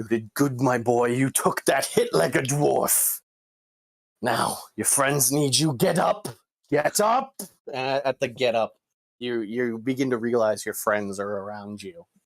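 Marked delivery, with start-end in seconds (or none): 0.0-7.3 tough-love, encouraging dwarf voice. Voicing the dwarven god Moradin, who looks down at a player: Moradin voice. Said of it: "the dwarven god Moradin looks down at you. He goes".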